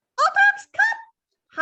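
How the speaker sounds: piercing, high-pitched squeak at full volume. Recalling calling the dogs with a hand up, high-pitched squeaky voice. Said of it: "High pitched, squeaky voice".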